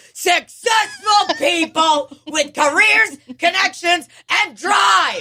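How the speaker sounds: very high, excited exclamatory delivery. Rereading a line to get its exclamation point inflection right, excited exclamation. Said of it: "That's how you should read a sentence with an exclamation point".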